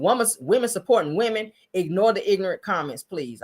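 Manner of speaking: ordinary delivery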